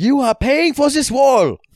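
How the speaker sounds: mock German character voice. Playing the Germans in a scene being watched: voicing the Germans. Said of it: "We are the Germans".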